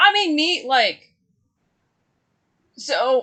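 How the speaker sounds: voice cracking, breaking mid-phrase. Speaker rambling to listeners mid-thought, with a voice cracking. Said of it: "my voice is cracking".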